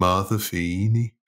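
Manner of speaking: poorly done put-on Liverpool accent. Trying to say a mom's name as someone from liverpool would; terrible liverpool accent. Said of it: "terrible accent I'm doing".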